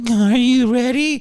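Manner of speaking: acted-out, very high, trembling, quivering, jittery nervous voice. Retelling an eighteen-year-old student dentist speaking to the patient, imitating a quivering nervous voice. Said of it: "with a shaking hand and a quivering voice being like".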